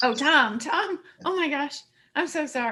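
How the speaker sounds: nervous, anxious, jittery voice. Improvising a first-date scene, acting nervous. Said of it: "I'm just so I'm nervous".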